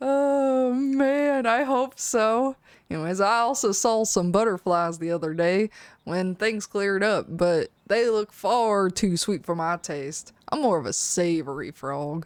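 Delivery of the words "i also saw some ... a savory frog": put-on Southern US accent throughout. Reading a game character's lines aloud: Southern accent. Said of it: "the only accent I can do is this one".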